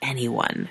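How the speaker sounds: plain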